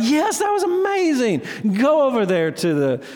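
very high, excited, gushing voice.

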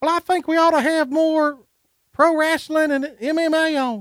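very high voice, pitched an octave up. Retelling a meeting where Ben spoke up: imitating Ben, higher pitched voice. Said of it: "Great impression".

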